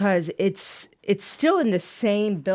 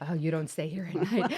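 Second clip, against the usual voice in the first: ordinary delivery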